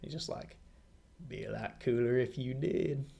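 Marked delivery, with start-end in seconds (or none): 1.3-3.0 put-on laid-back, stoned-sounding delivery. Quoting a film character's line: Matthew McConaughey voice. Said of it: "sound like Matthew McConaughey".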